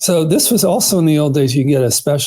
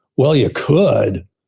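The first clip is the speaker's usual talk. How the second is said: withering, dismissive, condescending talking-down intonation. Quoting her reply with the exact intonation, mock-dismissive condescending tone. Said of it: "with the exact intonation, ... only an idiot would".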